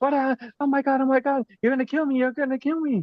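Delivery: put-on frantic, very high, rushed, panicked kid-like yelling. Recounting a masked kid in the next room yelling at the speaker: retelling a kid's panicked yelling. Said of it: "he's like yelling at me".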